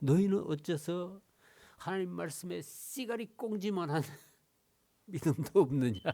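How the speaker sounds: high-pitched Gyeongsang regional dialect. Speaker recasts a remembered saying in gyeongsang dialect. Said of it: "경상도 사투리로".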